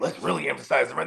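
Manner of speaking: ordinary delivery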